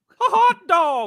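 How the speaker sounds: squeaked out, high and loud. Asked by the others to do a Mickey Mouse, giving a Mickey Mouse voice. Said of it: "I'll give you a Mickey Mouse".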